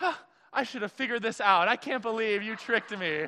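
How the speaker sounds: mock caught-off-guard amazement, high-pitched. Describing a photo, the speaker acts out how she reacted, retelling her surprise. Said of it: "she's all surprised".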